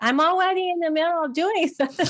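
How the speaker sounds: put-on very high, cute little child's voice. A parent repeats what their six-year-old said this morning, in a cute little kid voice. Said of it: "with his cute little voice".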